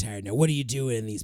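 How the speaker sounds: put-on old, grizzled guard voice. Describing a retired old guard character, speaker voices him: old grizzled guard voice. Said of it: "like the old grizzled like old guard".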